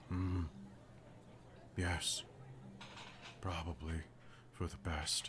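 very quiet, gentle, surprisingly soft hushed ogre voice. Narrator voices the immense ogre standing before the listener, surprisingly soft ogre voice. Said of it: "in a surprisingly soft voice".

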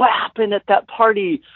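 curious, hushed stage whisper. Retelling how girls asked about a party afterwards: imitating someone whispering.

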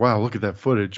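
normal talking voice

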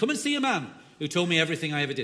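fast, loud northern English accent, rattled off.

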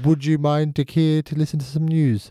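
sudden slide into put-on English accent. Playing a town crier calling out news: put-on English accent. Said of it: "I went English halfway through that sentence".

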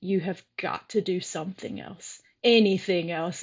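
mean, harsh, cutting, snapping tone. Recalling confronting people playing ping pong at 3 a.m.; retelling a mean snap. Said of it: "And I said it so mean".

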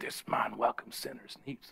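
low, unvoiced mutter.

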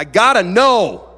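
very loud, high outburst. Retelling what he said while praying, said really loud. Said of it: "I said really loud".

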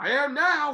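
loud, very high-pitched character voice. Retelling a boxing promoter's reply after his fall: Don King impression. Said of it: "That was a pretty good Don King impersonation".

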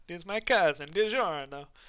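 put-on Italian accent. Mocking a film trailer's dialogue, in the House of Gucci accent. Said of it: "the House of Gucci accent".

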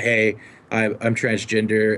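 ordinary delivery

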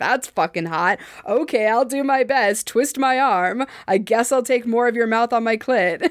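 ordinary delivery

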